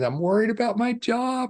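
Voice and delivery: acted-out, very high, words broken by laughter. Retelling a friend's breakdown, quoting her worry about her job with laughter bubbling through, imitating laughing while talking. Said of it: "she's just laughing and laughing and laughing".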